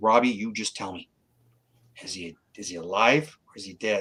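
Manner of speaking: firm, stern, no-nonsense, straight-talking tone. Retelling what a woman demanded of the speaker, Robbie: imitating a stern voice. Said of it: "she was like very stern".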